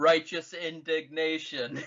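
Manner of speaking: flat, level, sassy monotone. Describing a favorite Mass Effect bit: sassy Elcor monotone. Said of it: "a really sassy Elcor and it's like".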